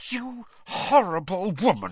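high, words forced through gritted teeth. A narrator reads Hermione rounding on a woman questioning her, through gritted teeth. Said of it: "she said through gritted teeth".

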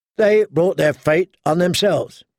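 ordinary delivery

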